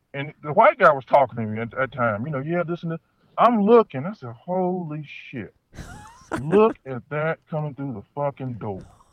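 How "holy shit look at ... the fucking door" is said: mock muttering under breath, quieter and slower. Retelling seeing a woman come through the door at a party, retelling muttering under breath. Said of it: "and kind of under my breath".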